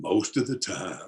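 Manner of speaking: throaty voice, words sitting way back in throat. Retelling a porch talk about a pentangle, the speaker answers as Ray Hicks: voice back in the throat. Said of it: "he talked way back down in his throat".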